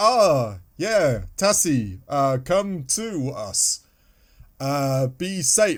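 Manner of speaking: mock hesitant, reluctant voice. Discussing the voice acting, imitating doctor's hesitant replies. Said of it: "The the doctor's hesitation in his replies".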